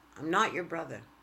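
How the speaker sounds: ordinary talk, nothing marked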